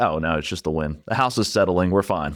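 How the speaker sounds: ordinary talk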